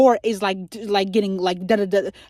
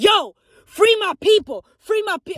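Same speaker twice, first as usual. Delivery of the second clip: mock fervent, passionate, very high-pitched voice; 10 semitones higher than usual. Retelling the Exodus story, acting out Moses's passionate demand to Pharaoh. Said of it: "I'm getting too passionate".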